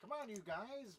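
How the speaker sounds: high elf character voice. Imitating the head elf calling to the others, Keebler head elf voice. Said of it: "he's the head elf, so he's like".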